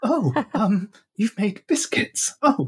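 mock very high, breathless, overcome, drawn-out delivery. Imitating a radio character who always sounds so breathless: imitating a breathless voice. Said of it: "she always sounds so breathless".

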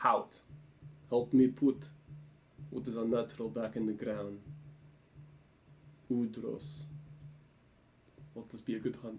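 hushed, soft whisper under the breath. As Vasily, drawing his bow before releasing an arrow, whispering to himself. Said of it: "just kind of whispers to himself".

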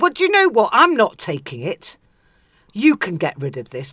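loud, lofty, swooping, commanding, haughty imperious voice. Retelling own words refusing to take something back, in a mock-imperious voice. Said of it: "in an imperious voice I said".

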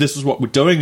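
usual speaking voice

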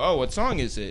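ordinary delivery

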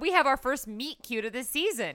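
ordinary delivery

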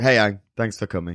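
flat put-on deadpan delivery. Recounting what a character says after Aang saves him: retelling a deadpan line. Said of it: "And it's so deadpan".

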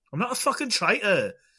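failed, bad Australian accent, very high-pitched. Co-hosts discussing The Traitors Australia, trying a bad Australian accent. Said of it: "That didn't go Australian in the end".

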